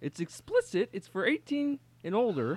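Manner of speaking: cartoon frog puppet voice. Answering a question about a new album: Kermit the Frog voice. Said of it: "when you do him".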